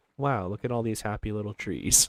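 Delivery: deep, hushed, soft ASMR-style voice. Playing a game on stream, doing a Bob Ross voice. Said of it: "Do a little bit of Bob Ross action".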